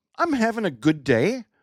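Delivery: terrible fake Irish accent, rising question tune. Joking that Irish sentences sound like questions: bad Irish accent, rising like questions. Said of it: "with the Irish accent, every sentence sounds like a question".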